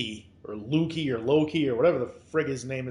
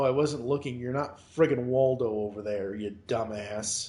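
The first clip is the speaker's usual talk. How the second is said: plain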